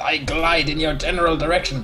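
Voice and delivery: exaggerated bad fake French accent. Quoting what the gliding thing usually says, in bad French accent. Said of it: "in a bad French accent".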